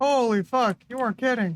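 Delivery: strong Canadian accent, thick Canadian vowels throughout. Reacting in surprise to something: strong Canadian accent. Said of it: "that's the most fucking Canadian I think my fucking accent has ever sounded".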